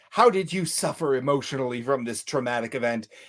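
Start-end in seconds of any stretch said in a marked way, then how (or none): none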